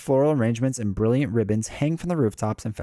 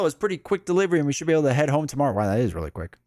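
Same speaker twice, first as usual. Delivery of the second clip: normal talking voice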